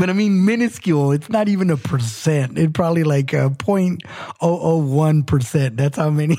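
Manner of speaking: heavy, exaggerated sarcasm. Joking about how few women are control freaks: laid-on-thick sarcasm.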